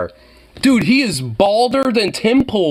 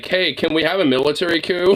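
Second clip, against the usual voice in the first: mock, excessively courteous, overly polite tone; 3 semitones lower, 3 dB quieter than usual. Imitating someone addressing the military: imitating an overly polite request. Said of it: "the most polite way of".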